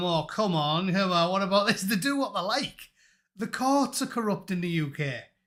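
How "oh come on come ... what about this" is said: usual speaking voice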